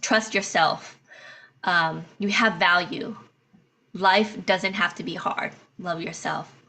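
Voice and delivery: tearful, heartfelt, emotional, close to tears. Speaking words of encouragement to viewers, tearing up. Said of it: "I think I'm tearing up".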